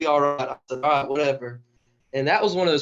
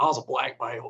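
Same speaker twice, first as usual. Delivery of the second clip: put-on full, genuine rural country accent; 3 dB quieter than usual. Retelling what a wrestling teammate said about karate: imitating a real country accent. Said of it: "he's got this real country accent".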